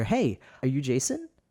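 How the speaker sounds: mock nervous, hesitant voice. Retelling answering a call back, imitating Vernon's nervous voice. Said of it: "it was just his nervous voice".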